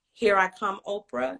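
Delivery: ordinary talk, nothing marked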